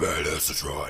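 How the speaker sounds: deep, hushed villain-style voice. Retelling how a movie character says his nickname: Doctor Claw voice. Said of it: "says it in a fucking Doctor Claw voice".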